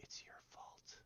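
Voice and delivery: tiny, faint, barely audible whisper. Voicing a voice in a player's head after a death: tiny whisper. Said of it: "just a tiny little whisper".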